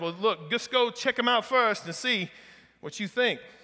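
attempted, loosely held put-on Southern Louisiana accent. Retelling a joke, the dog seller replies in an attempted Southern Louisiana accent. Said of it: "I'm gonna try this Southern Louisiana accent".

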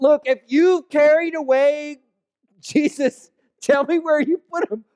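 play-acted outraged, incensed tone, pitched very high. Retelling Mary questioning the man she thinks is the gardener: acting incensed.

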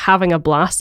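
ordinary delivery

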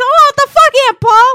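shrieking, very high, very loud and shrill. Retelling a show scene where a kid gets hit: imitating someone screaming.

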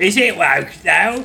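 London Cockney accent. Pitching a segment called Is It Woke Though, said in a Cockney accent. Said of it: "we speak in uh, Cockney accents".

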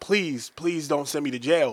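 put-on tearful, crying voice. Retelling begging not to be sent to jail: imitating own crying plea. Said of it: "crying, like, tears of".

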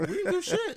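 voice shooting up very high. Answering a questioner about what you did, voice going high. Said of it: "your voice got high as hell".

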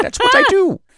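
fed-up exasperated huff, very high and loud. Voicing a researcher explaining his work to a party member: exasperated. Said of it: "he just looks exasperated. He's like".

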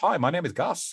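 put-on high Australian-accented platypus voice. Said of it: "I do do a little accent for him".

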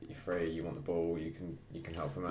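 ordinary delivery

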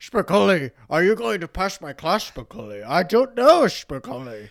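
loud, high, intimidating, scary teacher voice. Imagining a casting as the tough teacher: Sean Connery voice. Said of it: "Sean Connery would be a really funny Mister Hand".

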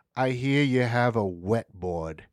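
put-on heavy Australian accent, very slow and drawn out. Retelling what Ellis asked a skater: Ellis's thick Australian accent. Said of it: "thick-ass Australian accent".

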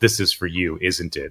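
mocking, scornful, laced with scorn. Retelling what she said halfway through a trailer: imitating a scornful remark. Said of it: "with scorn in her voice".

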